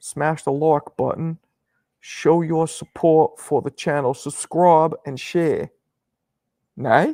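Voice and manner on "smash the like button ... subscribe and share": careful attempted man's voice, raised and slow. Ask the channel's audience for support, trying an attempted impression of a man's voice. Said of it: "I'll try and do it in his voice".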